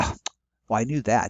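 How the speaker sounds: ordinary delivery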